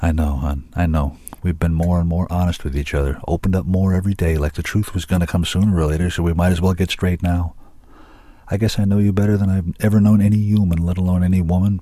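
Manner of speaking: plain reading voice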